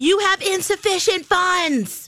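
put-on very high, shrill scream. Retelling how a cashier announced a declined card: imitating a cashier screaming. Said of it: "the woman screams out".

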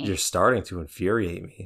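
low, quiet psychopathic inflection. Asked how the line is really said, mock psychopath delivery. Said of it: "the psychopath way of saying it".

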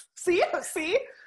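high, loud burst of laughter. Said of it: "I'm laughing".

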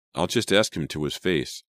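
ordinary talk

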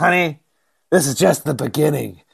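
put-on rough, creaky old trucker voice. Retelling the other host's reply about the podcast, the speaker imitates her like an old truck driver. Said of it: "He always sounds like an 80-year-old truck driver".

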